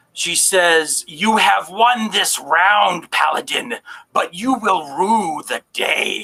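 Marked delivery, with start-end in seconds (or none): 1.1-6.3 put-on villain voice. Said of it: "she says in this voice".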